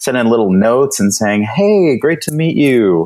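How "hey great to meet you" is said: slow, mock, insincere-sounding sarcastic delivery. Quoting own follow-up notes to new contacts, sounding sarcastic. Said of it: "The way I'm saying it now sounds sarcastic".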